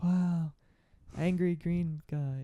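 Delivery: put-on very slow, high, cute little-girl Kiwi accent. Retelling what a small girl said on a film commentary: imitating a small girl's cute Kiwi accent. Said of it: "this really cute Kiwi accent".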